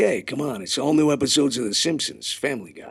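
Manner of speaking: Vegas-style showman announcer voice, full of hype. Speaker demonstrating the Fox promo voice they called Vegas guy: Vegas guy announcer voice. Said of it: "they called him Vegas guy".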